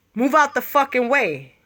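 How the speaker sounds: ordinary talk, nothing marked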